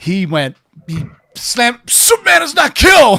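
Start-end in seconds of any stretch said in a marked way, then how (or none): 1.9-3.2 very high, shrill, loud, indignant, angry outburst. Retelling an angry moviegoer's outburst: imitating an angry moviegoer. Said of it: "audibly angry".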